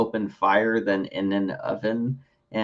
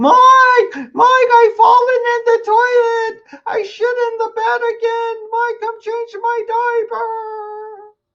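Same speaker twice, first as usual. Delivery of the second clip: shrill, very high, loud, slow wailing scream; 8 dB louder than usual. Acting out the woman in the background calling Mike: imitating a woman screaming for help. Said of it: "She's screaming".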